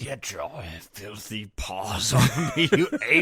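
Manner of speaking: deep, low, wide swooping delivery. Quoting a famous line from the old ape movie: Charlton Heston impression. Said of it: "Charlton Heston".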